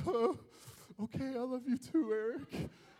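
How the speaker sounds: put-on plain, younger-sounding kid voice. As a little brother, retelling his answer to his brother eric; quoting his younger self. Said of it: "I'm like".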